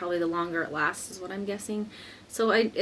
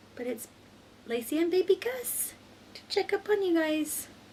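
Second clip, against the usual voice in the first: soft-spoken, hushed, very high-pitched voice; 11 semitones higher than usual. A mother recording an update while her baby sleeps, talking quietly. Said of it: "I'm kind of talking quiet".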